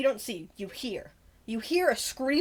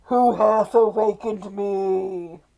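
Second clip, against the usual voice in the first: very loud, booming ghostly voice, "me" drawn out; 8 dB louder than usual. The game master voices what the players hear in the cave: ghostly voice. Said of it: "you hear in the cave a ghostly voice".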